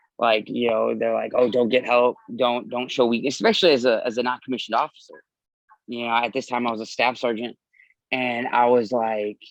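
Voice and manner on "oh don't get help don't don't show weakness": usual speaking voice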